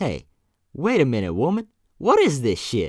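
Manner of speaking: put-on American vernacular accent, very high-pitched and very loud.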